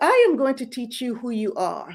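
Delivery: imitated British accent. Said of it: "in her British accent".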